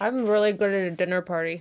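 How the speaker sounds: words pushed around a mouthful. Mid-discussion, the speaker keeps talking while talking with mouth full. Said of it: "Are you eating Taco Bell right now?".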